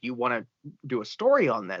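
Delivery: plain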